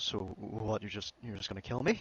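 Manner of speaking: voice breaking up, cracking with emotion, pleading. Retelling a cornered player's reply to an execution threat: imitating a breaking-up voice. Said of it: "breaking up voice".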